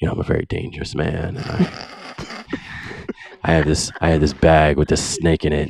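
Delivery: calm, quiet wrestling promo voice. Imitating a wrestler's promo that never yelled: Jake the Snake Roberts impression. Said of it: "he would talk just kinda like this".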